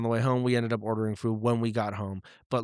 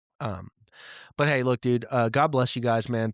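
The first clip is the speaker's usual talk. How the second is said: ordinary delivery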